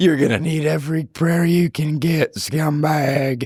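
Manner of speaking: high wrestler tough-guy voice. Threatening someone jokingly, then praised: good Stone Cold Steve Austin voice. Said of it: "that was a good voice".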